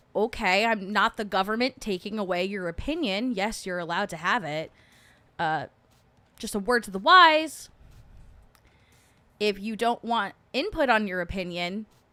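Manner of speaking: normal talking voice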